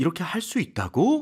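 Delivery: high, loud rise at the end. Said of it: "진짜 궁금해서 물어보는 게 아니라 확인한다는 느낌".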